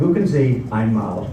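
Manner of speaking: ordinary delivery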